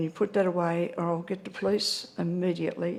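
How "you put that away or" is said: plain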